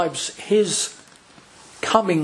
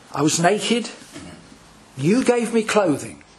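slow reading with long pauses. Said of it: "let me read it slowly".

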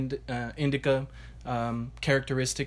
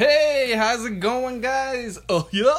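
very high, very loud goofy cartoon voice; 11 semitones higher, 9 dB louder than usual. Introduced on the episode, greeting the guys, Goofy impression. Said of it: "that was the extent of my goofy impression".

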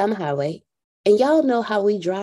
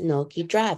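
put-on soothing, calm voice; 4 semitones lower, 5 dB quieter than usual. Retelling a father's reply to his daughter driving in the rain, imitating a soothing, calming voice. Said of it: "In the most soothing, calming voice".

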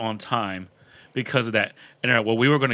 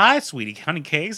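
high-pitched, nerdy, flirtatious cartoon voice; 7 semitones higher than usual. Retelling how a caller talked on the phone: imitating a caller who sounded like a Simpsons character.

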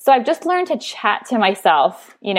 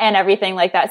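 normal talking voice

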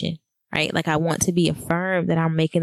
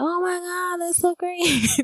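very high, thrilled, delighted exclamation; 13 semitones higher than usual. Retelling a three-way call with mom and sister: imitating excited family. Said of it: "They were really excited about".

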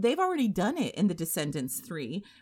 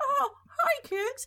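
very high-pitched cartoon mouse voice. Talking about how Disney manipulates audiences, doing a high-pitched Mickey Mouse voice. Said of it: "high-pitched voice".

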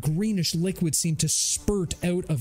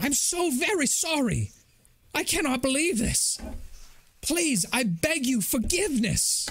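very high, imploring, pleading voice; 9 semitones higher than usual. Voicing a well-groomed robed man kneeling before a player: pleading. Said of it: "As he begins to plead".

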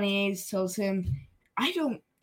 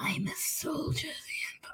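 hushed, breathy, airy, low-key whispered character voice; 8 semitones higher, 10 dB quieter than usual. Quoting a character from the show: Crosshair voice. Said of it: "I can't do the Crosshair voice".

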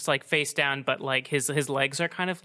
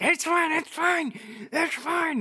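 screaming, much higher. A narrator voices a man a whip has barely missed, screaming. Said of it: "And he's like screaming".

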